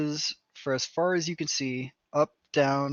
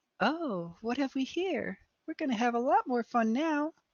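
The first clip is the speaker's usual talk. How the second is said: put-on small girl's voice, very high; 10 semitones higher, 3 dB quieter than usual. Narrating a fight scene, voicing an unseen girl, in a little girl voice. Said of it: "you hear a little girl's voice going".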